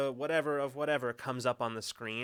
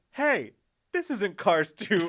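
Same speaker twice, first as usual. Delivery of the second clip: loud, slow call-out, pitched up, carrying far; 7 semitones higher, 7 dB louder than usual. Retelling a friend calling out in a silent theater: imitating Charlie calling out loudly. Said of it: "calls out loudly in the theater".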